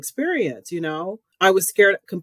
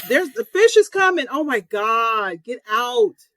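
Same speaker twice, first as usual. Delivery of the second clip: mock-panicked, acted-out scream at higher pitch; 6 semitones higher than usual. Two people recalling rewatching Jaws and yelling at the people in it: retelling screaming at the TV. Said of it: "I'm still screaming at the TV going".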